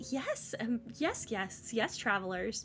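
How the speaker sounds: very soft, quiet, sweet customer-service voice. Describing a game character's manner, doing Ting Yuan's customer service voice. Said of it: "got that customer service voice so down pat".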